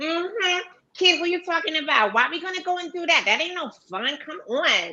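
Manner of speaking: very high, street-smart put-on Brooklyn accent. Speaker auditions for a director by imitating their niece from Brooklyn: imitating niece's Brooklyn way of talking. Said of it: "my niece talked just like this".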